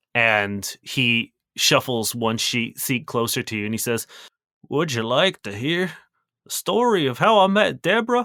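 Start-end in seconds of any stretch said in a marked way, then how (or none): 4.6-8.2 put-on drunk, tearful, sentimental old-man voice. Voicing an old man offering a player his story: drunk, teary old man voice. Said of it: "tears welling up in his eyes".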